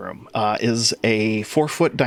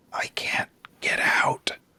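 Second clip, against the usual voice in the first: very faint, barely-there whisper. Narrating a scene, a voice beyond a creaking doorway speaks: faint whisper. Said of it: "you hear a whisper that just uh".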